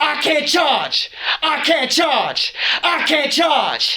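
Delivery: high, desperate robot scream at the top of the lungs. Retelling how a robot screamed when it was unplugged: imitating a robot screaming. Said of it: "he screamed from the top of his lungs".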